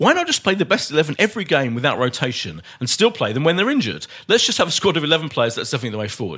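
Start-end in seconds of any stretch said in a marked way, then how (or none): none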